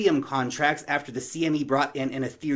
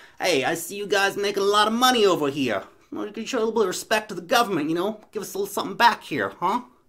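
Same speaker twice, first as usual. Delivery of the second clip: terrible Italian mafia accent, pitched up; 6 semitones higher, 3 dB louder than usual. Comparing the government to the mafia, playing the collector: terrible Italian mafia accent. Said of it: "It's my terrible Italian mafia accent".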